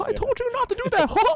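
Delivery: put-on menacing, dictatorial cartoon mouse voice. Imitating Mickey Mouse portrayed as a dictator: Mickey Mouse as menacing dictator. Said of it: "They portray Mickey as this, like, dictator".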